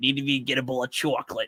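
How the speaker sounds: smoker's accent. Showing how the reading voice was found: smoker's accent. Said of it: "that's how I find the smoker's accent".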